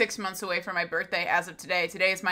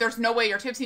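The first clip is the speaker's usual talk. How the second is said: plain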